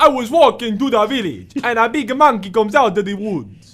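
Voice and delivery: very loud West African accent, pitched high. Joking about finally using his West African accent for something: West African accent. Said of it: "my West African accent for something".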